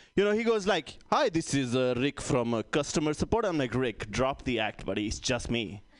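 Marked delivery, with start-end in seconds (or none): 1.1-3.5 put-on Indian accent. Comic retelling a call to customer support, imitating an indian accent. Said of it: "another Indian dude like picks up the phone".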